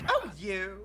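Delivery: put-on old-fashioned fifties lady voice. Showing how to react to teasing: fifties woman reaction. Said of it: "react to it like a fifties woman and just be like".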